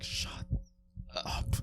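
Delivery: put-on clenched-teeth delivery. Retelling what she snapped back during a tense moment, through gritted teeth. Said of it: "I did say it through gritted teeth".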